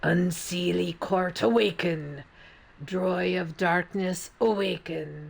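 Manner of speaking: ancient-sounding, growled monstrous voice. A bleeding man calls on the Unseelie court to awaken, in a growled monster voice. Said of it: "He growled the words, his tone ancient sounding, and a voice of a monster".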